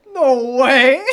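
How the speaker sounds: loud, high-pitched, stunned delivery. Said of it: "I was like".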